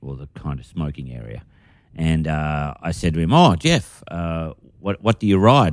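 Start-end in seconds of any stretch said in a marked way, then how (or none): 3.3-5.7 very nervous, stumbling, halting delivery. Retelling asking a fellow comic a question backstage: imitating own nervous question. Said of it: "very nervously".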